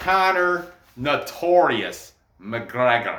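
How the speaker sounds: clumsy, poor, failed Irish accent. Announcing an upcoming fight, attempting a bad irish accent. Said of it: "I definitely can't do that, the Irish accent".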